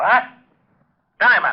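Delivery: full-on, high-pitched yelling outburst. After relaying a phone message, calling out to someone across the office: yelling. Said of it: "You better watch that yelling".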